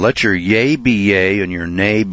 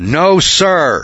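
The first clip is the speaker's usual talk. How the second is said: raised, pitched-up voice made to carry; 8 semitones higher, 4 dB louder than usual. Speaker retells answering a judge administering an oath; raised voice. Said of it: "I raised my voice and I said".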